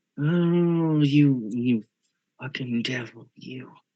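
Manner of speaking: hissing vampire voice with a drawn-out "oh". In a role-play, a fanged character rears back and answers her, hissing. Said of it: "his fangs on full display as he hisses".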